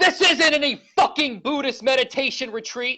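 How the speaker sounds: mock angry outburst. Retelling a fellow prisoner who threw a pastry at him: mimicking an angry man. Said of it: "he gets so angry".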